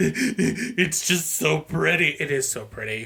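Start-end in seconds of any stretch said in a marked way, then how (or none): 0.0-2.1 put-on very slow, drawn-out, childlike sobbing. Retelling watching an engaged couple on a show: imitating own sobbing. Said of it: "I'm sobbing like a child".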